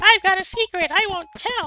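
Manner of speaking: put-on very high, very loud child's voice. Doing a character line before lettered answer choices: little kid voice. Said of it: "I'm gonna do a little kid voice now".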